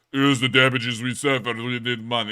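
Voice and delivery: flat, monotone mechanical robot voice. Reviewing a video, speaker imitates how the man in it would talk, robot voice. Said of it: "because he's in the robot voice".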